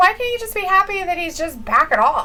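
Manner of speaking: ordinary delivery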